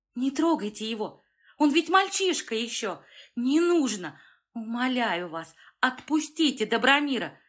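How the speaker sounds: crying out loudly, shouting. Zara sees a thug about to beat Dobromir again, shouting loudly. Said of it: "Зара громко закричала".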